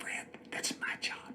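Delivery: very sweet, gentle whisper. Retelling what she whispered to him his first day on set: retelling a sweet whisper. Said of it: "she kind of whispered very sweetly".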